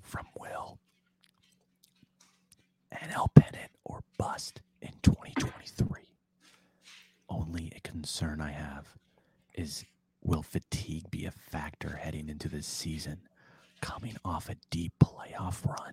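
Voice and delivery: gentle ASMR-style whisper. A podcast host reads a viewer's message aloud: asmr whisper. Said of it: "Can I read this in ASMR?".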